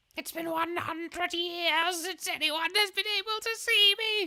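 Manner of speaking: botched, very high ancient tree voice. Voicing the tree character in the game: failed put-on tree character voice. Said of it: "No, that's not the voice".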